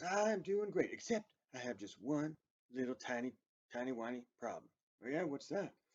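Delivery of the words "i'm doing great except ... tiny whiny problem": put-on kids'-show puppet voice. Voicing a fox visitor greeting the boys and girls: Mister Fox voice. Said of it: "How you doing today, Mister Fox?".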